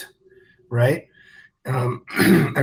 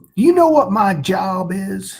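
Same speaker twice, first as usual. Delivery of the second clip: put-on deep Southern accent; 6 semitones higher, 3 dB louder than usual. Quoting a seal training instructor from first phase: imitating a deep southern accent. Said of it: "talked with a deep Southern accent".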